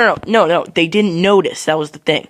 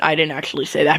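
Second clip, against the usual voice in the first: ordinary delivery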